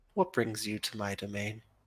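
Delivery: gentle soft voice. A narrator voicing a woman asking visitors what brings them to her domain, soft-spoken. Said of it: "She seems soft spoken in the way she speaks".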